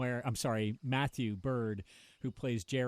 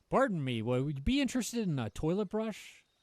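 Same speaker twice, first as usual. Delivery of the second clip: put-on high pirate peddler patter; 6 semitones higher than usual. Playing a seller on the high seas: pirate salesman voice. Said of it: "A pirate salesman".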